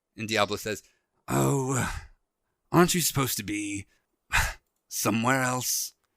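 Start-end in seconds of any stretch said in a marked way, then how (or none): 1.3-5.9 put-on bird-folk character voice. Game master voices Diablo answering the one who landed between him and the party, Diablo's voice. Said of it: "And he is going to swing at you with his talons because he's an Aarakocra. / and you see a raven fly away from you guys. / He stands up and he kind of turns around and he says".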